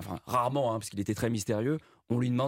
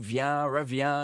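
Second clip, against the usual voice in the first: put-on French spoken with an English accent; 4 semitones higher than usual. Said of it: "aurait parlé en français avec l'accent anglais".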